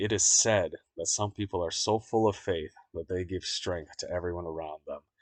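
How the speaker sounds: plain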